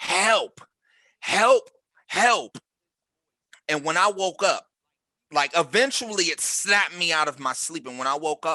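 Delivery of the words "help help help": high, loud shrieking at the top of lungs. Retelling a dream where he screamed in the speaker's face, imitating a shrieking plea for help. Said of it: "he was shrieking at me".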